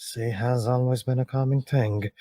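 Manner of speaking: muttered under the breath. Retelling what a man said to himself on seeing something: muttered under the breath. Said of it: "he kind of mutters under his breath".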